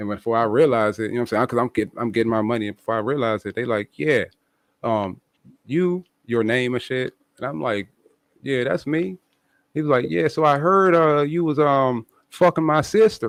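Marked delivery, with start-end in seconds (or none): 10.1-13.3 put-on country accent. Retelling what a guy said to the speaker, in a country accent. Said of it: "that in a country accent".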